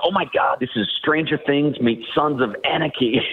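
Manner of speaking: full, all-in put-on American accent, high. Retelling a Hollywood Netflix producer's reaction to a preview: full American voice. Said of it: "put on the full, like, American voice".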